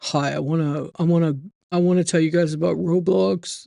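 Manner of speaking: voice of a grown-up dude. Describing a young commentator's voice change, imitating his newer man voice. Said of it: "It's like a man voice".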